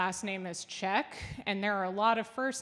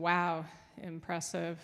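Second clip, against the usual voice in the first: mock flat, emotionless deadpan voice; 3 semitones lower, 4 dB quieter than usual. Retelling own reaction to a niece's cartwheel: retelling own flat, emotionless praise. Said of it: "I have trouble expressing emotions using my voice".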